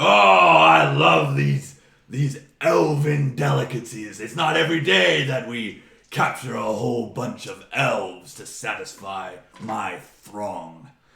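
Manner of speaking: very loud, booming, drawn-out ogre bellow. The narrator voices an ogre leader feasting before his cheering ogres, loud ogre leader voice. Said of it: "in a in a in a loud voice".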